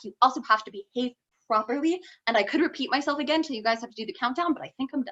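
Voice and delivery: very fast, nonstop, rattled-off racing through words. Explaining the prophets' message before the countdown ends, talking very fast. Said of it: "you did it fast".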